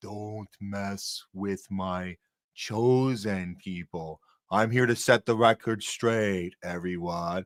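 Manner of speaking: put-on very low, deep, slow voice. Imagining how he could warn everyone off, in a put-on deep voice. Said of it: "this deep voice, like".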